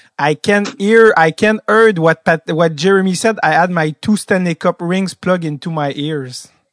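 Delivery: put-on Québécois-accented English, loud and slow. Quoting a famous reply to reporters: imitating Patrick Roy's Québécois accent. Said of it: "avec son bon accent québécois".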